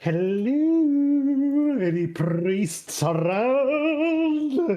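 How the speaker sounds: very high, slow, drawn-out voice. Player's character wanders in and asks for priests, grinning while speaking. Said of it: "I give this grin".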